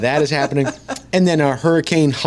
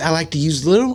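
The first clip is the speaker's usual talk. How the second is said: attempted Tennessee country accent with higher pitch; 4 semitones higher than usual. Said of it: "I can't do a [name] accent".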